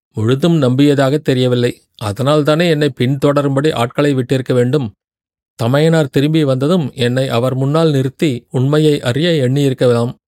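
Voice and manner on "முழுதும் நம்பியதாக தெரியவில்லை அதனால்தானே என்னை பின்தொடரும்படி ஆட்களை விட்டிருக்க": ordinary delivery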